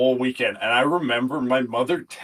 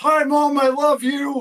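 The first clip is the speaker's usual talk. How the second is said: shrill, very high, very slow, drawn-out scream; 4 dB louder than usual. Retelling a friend on headset begging to talk to a mother: imitating a friend screaming. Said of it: "Carm screams".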